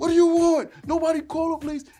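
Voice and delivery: acted-out, very high, loud scream. Retelling how a big man pinned him to a rail: imitating a man screaming. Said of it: "he's screaming".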